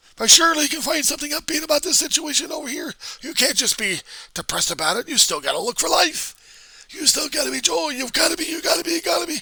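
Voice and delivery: shrill, very loud, high-pitched yelling rant. Imitating people who push cheerfulness on grief: imitating people yelling. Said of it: "they're not yelling and screaming like that".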